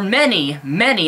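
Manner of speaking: leaning hard on the word many. Criticizing atheists and Christians on YouTube, stressing the word many. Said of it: "and I stress the word many".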